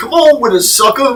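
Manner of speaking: very high, very loud yelling. Repeating the overheard line after being challenged, impersonating the man. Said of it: "That's what he said".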